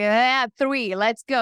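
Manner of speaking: plain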